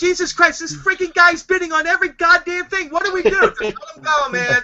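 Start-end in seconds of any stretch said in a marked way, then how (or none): 0.0-3.5 high-pitched, loud yelling outburst. Imagining someone's reaction to constant eBay bidding: imitating someone yelling. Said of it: "He's probably yelling at me".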